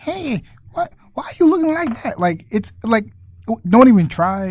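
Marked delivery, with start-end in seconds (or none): 0.0-2.2 put-on very high stock old woman voice.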